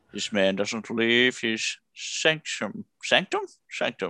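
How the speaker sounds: grand, classic film-star narration, put-on documentary narrator voice. Joking about a mockumentary, slipping into a Sean Connery voice. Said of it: "I don't know why I'm becoming Sean Connery".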